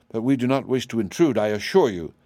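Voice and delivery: ordinary delivery, nothing marked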